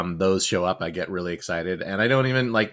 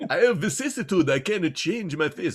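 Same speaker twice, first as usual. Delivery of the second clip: horrible fake vampire accent, pitched up; 9 semitones higher than usual. Improvising a vampire character in conversation, speaking in a vampire accent. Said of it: "It totally sounded just like a vampire".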